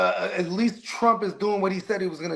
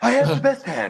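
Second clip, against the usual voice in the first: put-on bragging politician voice, pitched higher; 3 semitones higher, 4 dB louder than usual. Imitating Trump bluffing at poker: Donald Trump impression. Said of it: "I bet you Trump is a terrible poker player".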